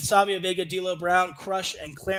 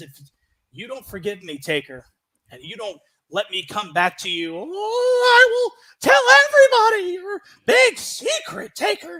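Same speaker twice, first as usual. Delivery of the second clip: very loud, high, sing-song, swooping, drawn-out I; 7 semitones higher, 9 dB louder than usual. Retelling a wrestling manager's threat to a wrestler: Paul Bearer voice. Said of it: "Paul Bearer impression".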